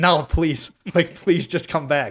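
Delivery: pleading voice. Retelling chasing a runaway dog through the woods: imitating own past pleading. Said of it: "I'm like, pleading with her".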